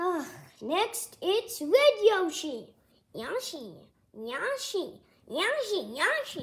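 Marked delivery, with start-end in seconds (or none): 3.1-6.4 whining, swooping, drawn-out sing-song creature voice. Voicing Yoshi grumbling before the war starts: complaining Yoshi voice. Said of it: "Stop complaining about the war".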